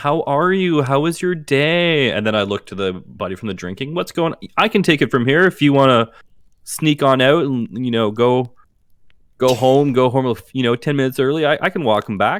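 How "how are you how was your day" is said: very loud, slow, pitched-up voice with "day" drawn out. In an improvised scene, greeting someone who has come home: speaking very loudly. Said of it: "as I'm speaking like very loudly".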